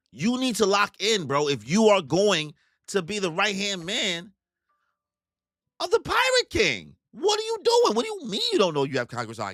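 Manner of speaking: incredulous, disbelieving tone.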